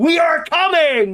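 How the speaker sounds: mock screaming shout, very high and loud. Pitching a donation sound, imitating Hassan Piker screaming. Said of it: "Hassan Piker screams".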